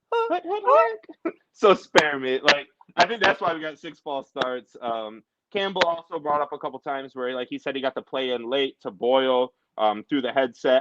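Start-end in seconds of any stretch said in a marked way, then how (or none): 0.1-1.3 put-on girly voice, pitched way up high. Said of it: "That's what Jared Goff sounds like".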